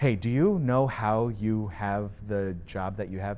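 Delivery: plain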